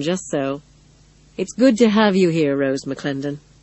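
plain

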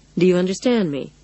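ordinary delivery, nothing marked

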